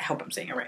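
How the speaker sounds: fast, soft whisper.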